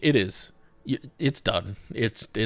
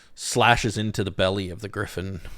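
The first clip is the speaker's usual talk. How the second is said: ordinary delivery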